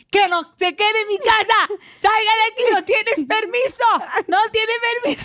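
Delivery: shrill, very high, loud shouting. Describing what you do when your dog stares at nothing: acting out yelling at spirits. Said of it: "Y yo empiezo".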